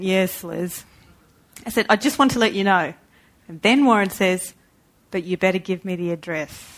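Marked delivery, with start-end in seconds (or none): 0.0-0.8 mock patronizing, humoring, condescending tone. Recounting a phone call, imitating a reply of "yes, Liz" in condescending tone. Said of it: "one of those condescending".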